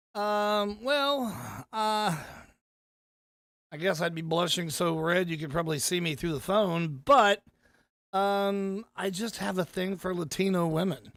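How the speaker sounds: ordinary talk, nothing marked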